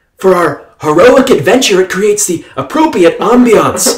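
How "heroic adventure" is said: "heroic adventure" stressed as if in capital letters. A narrator reads her reply to him, stressing heroic adventure. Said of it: "You can even hear the capitalization of heroic adventure".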